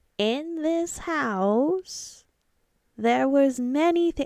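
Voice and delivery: thin, high, slow wispy voice, house drawn out. Quoting the voice from a TV show, attempted little wispy voice. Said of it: "that little wispy voice".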